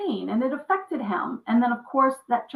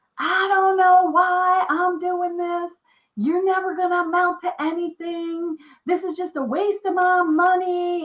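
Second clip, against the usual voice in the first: high, berating mock yell; 7 semitones higher, 4 dB louder than usual. Retelling a father yelling at his child: imitating father yelling. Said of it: "he's yelling at me".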